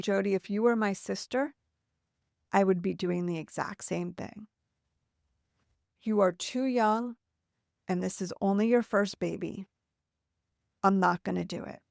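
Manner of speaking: ordinary talk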